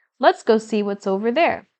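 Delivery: ordinary delivery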